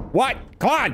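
shouting. Urging another player who can't find the way back: yelling. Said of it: "Why are you yelling at me?".

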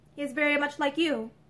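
ordinary delivery

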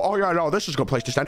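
ordinary talk

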